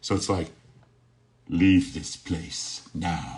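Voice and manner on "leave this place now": very slow, menacing, echoing masked villain voice. Comparing two villains' voices, the speaker demonstrates a Doctor Doom voice with Vader effect. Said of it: "he had like the Vader effect".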